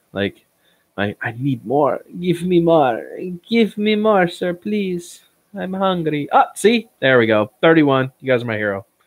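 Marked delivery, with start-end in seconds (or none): 1.2-6.2 humble, pitiful pleading, high-pitched and drawn out slowly. Asking viewers to press like, mock begging like Oliver Twist. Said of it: "I feel like Oliver asking".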